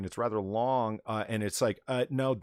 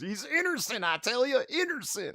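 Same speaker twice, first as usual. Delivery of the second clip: put-on high-pitched Southern accent; 12 semitones higher than usual. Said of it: "your attempt at a Southern accent based largely or possibly entirely on Yosemite Sam".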